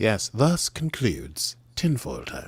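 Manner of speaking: slow, bad English accent. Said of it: "my bad James Mason accent".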